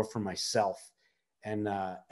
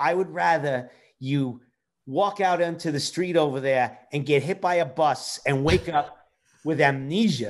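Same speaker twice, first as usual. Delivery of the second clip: put-on Yiddish-inflected accent; 5 semitones higher, 3 dB louder than usual. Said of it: "I can't do the accent so well anymore".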